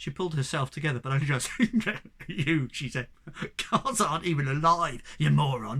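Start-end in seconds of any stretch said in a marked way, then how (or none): none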